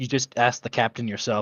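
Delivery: plain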